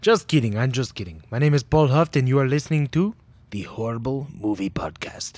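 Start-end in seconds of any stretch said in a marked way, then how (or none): 1.3-5.4 put-on Spanish-sounding accent. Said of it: "I'm not Spanish".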